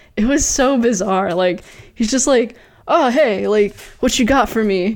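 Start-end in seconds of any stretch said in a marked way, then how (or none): 2.9-5.0 mock nonchalant, unauthoritative cop voice. Retelling how a cop in a film talked: imitating a nonchalant, unauthoritative cop. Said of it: "nonchalant and, like, not authoritative at all".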